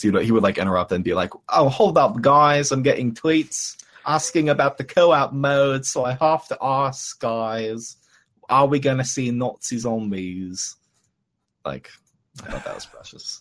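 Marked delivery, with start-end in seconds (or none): 1.5-10.8 put-on British accent, high, very slow, guys stretched. Imitating an interrupting host for friends, in a british accent impression. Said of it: "Pretty good accent".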